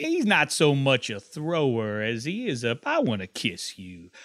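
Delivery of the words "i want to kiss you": put-on drawling voice, lower and quieter. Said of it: "Namath impression".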